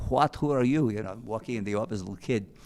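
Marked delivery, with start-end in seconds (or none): 0.1-0.9 put-on thick, heavy Greek accent. Retelling how a boxing man questioned them in his office, thick Greek accent. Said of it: "he thick Greek accent".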